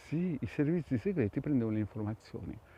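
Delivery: speaking under the breath. Telling the audience something so nobody around can hear: whispering. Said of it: "qui parlo sottovoce perché non voglio che mi sentano".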